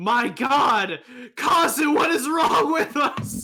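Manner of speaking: shrill, very high, very loud panicked freak-out. Voicing a character who grasps a player and freaks out: acted freak-out. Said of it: "grasps you out of character and freaks out".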